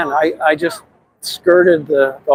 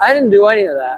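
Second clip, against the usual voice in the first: play-acted, slightly raised, pitched-up voice; 5 semitones higher than usual. Retelling standing up to a woman yelling false accusations, retelling a slightly raised voice. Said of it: "I sort of raised my voice a little bit".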